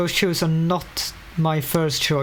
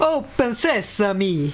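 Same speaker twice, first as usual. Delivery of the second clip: put-on Italian accent, higher pitch; 5 semitones higher than usual. Joking about a door-opening phrase: Mario voice. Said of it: "if you say it in Italian accent, it sounds a bit like Mario".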